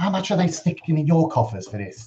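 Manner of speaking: dropped, hushed, aside-like voice. Player voicing his character asking a titled man privately about his pay, dropped voice. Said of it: "he drops his voice down a bit".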